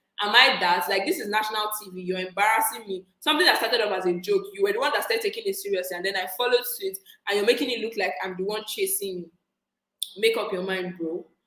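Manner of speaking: normal talking voice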